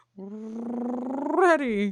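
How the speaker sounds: timid lion voice, "ready" long and stretched out. Getting ready to spin the wheel, doing a Cowardly Lion voice. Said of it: "cowardly lion when he goes like".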